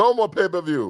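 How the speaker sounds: put-on Russian-style accent.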